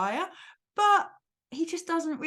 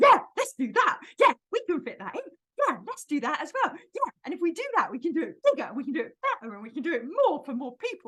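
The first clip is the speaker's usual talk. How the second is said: overexcited, gushing cartoon voice, thrilled throughout; 4 semitones higher than usual. Explaining how Tigger talks, doing an overexcited Tigger voice. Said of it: "So Tigger talks like this".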